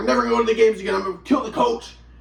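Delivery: ordinary delivery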